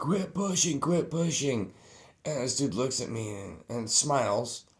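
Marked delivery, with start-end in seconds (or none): 0.0-1.7 play-acted screaming, pitched up. Retelling a crowded metal show: imitating security screaming. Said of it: "you could hear security screaming".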